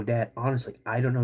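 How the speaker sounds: ordinary talk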